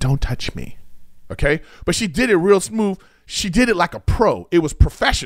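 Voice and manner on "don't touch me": mock quiet, hushed tone, lower pitch. Retelling what a stripper quietly said during a scene: imitating a quiet warning. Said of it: "she quietly says to me".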